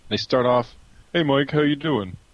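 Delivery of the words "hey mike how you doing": high-pitched, terrible put-on Philly accent. Mocking callers to Philly sports stations, the speaker does a terrible Philly accent. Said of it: "the terrible Philly accent and then all the idiot Philly callers".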